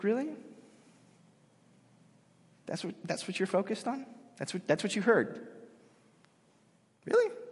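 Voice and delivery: put-on disappointed tone. Retelling a reply to people who heard only blasphemy, acting out disappointment. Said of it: "And Jesus is super disappointed".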